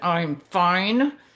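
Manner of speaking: through gritted teeth, jaw clenched, words pushed out. Retelling the reply to a husband who circles back on a ride, acting out gritted teeth. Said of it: "if I say through gritted teeth".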